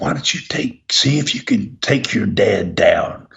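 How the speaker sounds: hushed, secretive whisper. Retelling what the others said to the speaker: imitating a whisper. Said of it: "they whispered to me".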